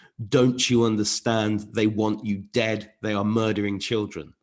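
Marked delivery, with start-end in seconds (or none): none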